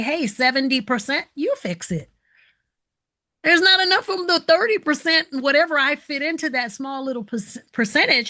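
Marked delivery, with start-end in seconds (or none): none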